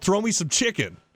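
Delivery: light, easy calling-out voice. Recalling yelling to people leaving the front row, retelling a yell. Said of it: "I yelled".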